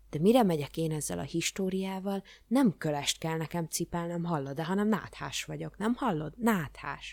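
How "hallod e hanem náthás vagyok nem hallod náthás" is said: plain reading voice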